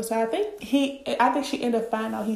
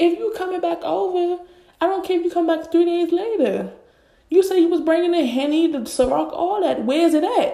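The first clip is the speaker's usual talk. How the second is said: put-on, loud, fired-up, heated rant; 7 semitones higher, 6 dB louder than usual. Retelling an argument among friends, acting out a heated rant. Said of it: "I'm heated".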